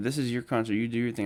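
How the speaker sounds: usual speaking voice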